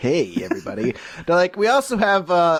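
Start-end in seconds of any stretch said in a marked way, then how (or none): 0.0-0.9 very low-pitched radio DJ voice. Imagining an office discussion about who should do the cold calls, Casey Kasem's son voice. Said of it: "we got Casey Kasem's son over there".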